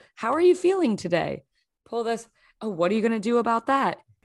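flat, rich, nondescript put-on talking-doll host voice. Speaker imitates a pull-string talking doll of a tv host, emotionally flat buttery voice. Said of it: "exactly emotionally flat, but like a rich, buttery sort of nondescript tone".

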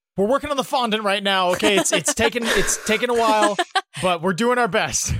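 high yell projected upward from below. Voicing a character calling up to the party on the walls: Karlik yelling up. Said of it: "Karlik yells up at you guys".

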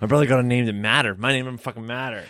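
ordinary delivery

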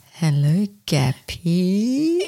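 put-on sexy, seductive come-hither voice. Challenged about putting on voices, a speaker demonstrates a put-on sexy voice. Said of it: "If I'm putting on my sexy voice, I'd sound like this".

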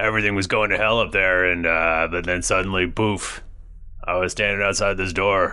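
role-play half-orc character voice. A player speaks in character after a listener names it: half-orc character voice. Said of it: "it's your half orc voice".

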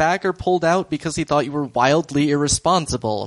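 normal talking voice

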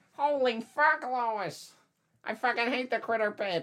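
shrill, booming, very loud, high-pitched comic bellow. Joking that Peter Griffin hates the podcast: Peter Griffin voice. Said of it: "this has a lot of impressions".

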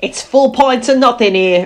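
put-on northern English Yorkshire accent. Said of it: "What is that voice?".

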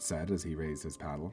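ordinary delivery

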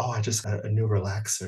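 mock whispering voice. Retelling what a coworker said about her hair: imitating a coworker whispering. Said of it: "And she whispered".

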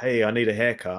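imitated American accent. Retelling a barber's story about a caller wanting a haircut, in an American accent. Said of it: "called up with an American accent and said".

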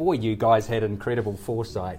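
ordinary talk, nothing marked

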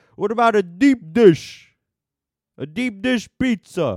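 very loud, very high, drawn-out commercial-style bellow. Retelling a pizza commercial, the Chicago guy interrupting: imitating a loud Chicago guy. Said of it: "sorry if I blasted your eardrums".

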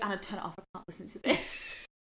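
distressed whispered voice. Retelling a friend asking to stop a voice note: imitating someone upset. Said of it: "He was so upset".

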